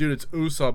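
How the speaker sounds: plain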